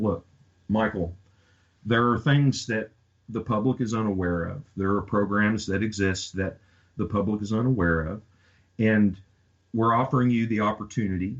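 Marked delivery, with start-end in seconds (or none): none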